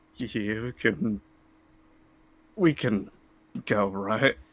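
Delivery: hushed whisper. Speaking in character to Noctis in a silent hall: whispering. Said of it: "Is it bad if I try to whisper?".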